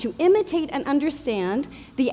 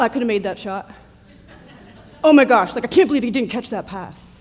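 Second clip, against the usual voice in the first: put-on teenage boy voice; 3 semitones lower, 4 dB louder than usual. Describing teenagers watching a big game, the speaker imitates them in a teenage boy voice. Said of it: "That's my teenage boy voice".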